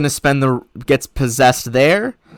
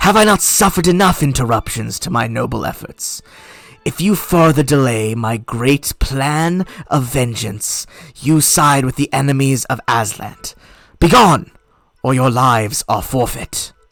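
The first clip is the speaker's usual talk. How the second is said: strange, dry, withered, dried-out speaking voice. Voicing the Lich answering a sending spell: deep, very quiet, dried out voice. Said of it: "deep, but, uh, kind of, like, very quiet, dried out voice".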